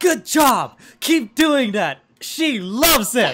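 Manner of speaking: very loud, ferocious, aggressive, high shouting yell. Voicing Keisu, who speaks Draconic to the group, in a very aggressive manner. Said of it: "in a very aggressive manner".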